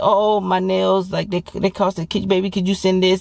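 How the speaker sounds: smooth, slick, coaxing, sweet-talking wheedle. Imitating how a woman will slickly ask for money: imitating a woman slickly asking. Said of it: "she gonna be slick at first".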